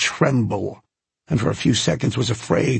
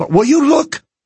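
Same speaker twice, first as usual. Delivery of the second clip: full-volume, very high, shrill shout; 8 dB louder than usual. Wilson, told by the pilot to keep his voice down, shouting. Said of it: "shouted Wilson".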